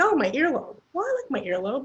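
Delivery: high, fast, cheery, upbeat voice.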